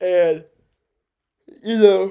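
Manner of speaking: very loud, high talking through a yawn. Discussing the Bears' season, speaking while yawning. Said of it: "I'm not sure why I'm yawning".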